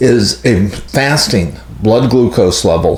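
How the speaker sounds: fasting stressed, slow and deliberate. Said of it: "I keep emphasizing the word fasting".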